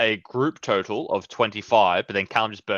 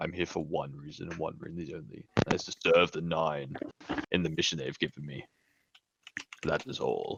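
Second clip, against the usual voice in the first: strained, forced deep put-on voice; 5 semitones lower, 10 dB quieter than usual. Speaker speaks in character as Jarax; deep Jarax voice. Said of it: "I'm trying to do a deep voice and it hurts".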